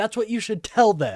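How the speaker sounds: loud, high, furious, angry yelling rant.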